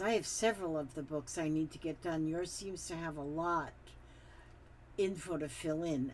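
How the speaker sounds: ordinary talk, nothing marked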